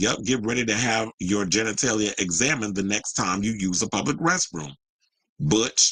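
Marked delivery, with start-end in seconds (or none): none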